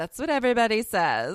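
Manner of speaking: loud, very condescending tone. Retelling what masseuses at conferences answered: imitating a condescending reply. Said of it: "real condescending".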